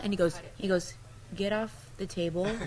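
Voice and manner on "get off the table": imitated flat monotone delivery, quieter. Retelling what he said when she got on the table, imitating a very monotone voice. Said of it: "very monotone".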